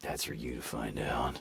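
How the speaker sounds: gravelly, very low, hushed, quiet rasping voice. Imagining answering a clerk at the tow office: gravelly Batman voice. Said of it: "Fucking just straight up Batman him".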